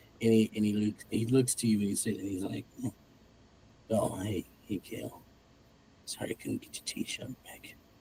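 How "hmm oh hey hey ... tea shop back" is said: half-delirious, dazed, breathy out-of-it murmured whisper. Voicing a wounded character half delirious from injuries: dazed, out of it. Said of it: "he's sort of out of it".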